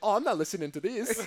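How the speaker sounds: put-on poor Italian accent. Imitating everyone in Italy tuning out, in a Mario-style Italian accent. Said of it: "Is that your Italian accent?".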